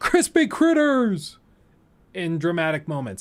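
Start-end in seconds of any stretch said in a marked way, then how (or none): 0.0-1.4 put-on, very high screamed-out cry. Retelling a game character's dramatic outburst: imitating a scream. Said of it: "he screamed out".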